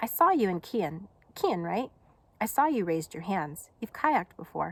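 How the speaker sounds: plain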